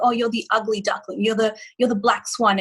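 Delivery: ordinary delivery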